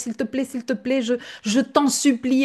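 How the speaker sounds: put-on near-tearful pleading. Retelling a client's plea during a consultation: imitating a tearful plea. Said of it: "presque avec les larmes aux yeux".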